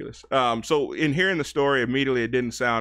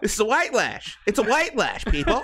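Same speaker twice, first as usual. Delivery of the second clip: high-pitched put-on indignant pundit voice, higher; 10 semitones higher than usual. Playing Van Jones in disguise after being told to sound indignant: Van Jones impression. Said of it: "just go on as Van Jones".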